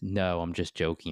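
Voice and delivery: normal talking voice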